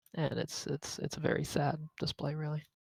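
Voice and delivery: ordinary talk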